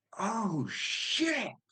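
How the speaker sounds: acted very high, sudden shriek of surprise. Retelling reacting while the fiance dozed off: imitating own scream. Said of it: "And I screamed".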